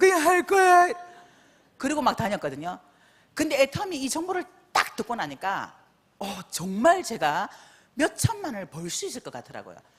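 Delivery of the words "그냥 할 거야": put-on crying child's voice, very high and loud. Retelling her daughter's reply after being scolded: imitating a child crying. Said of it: "막 울면서".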